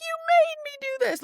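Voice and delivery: piercing, shrill, very high-pitched screech. Retelling how the audiobook made the queen sound: imitating shrill screaming. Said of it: "shrill screaming".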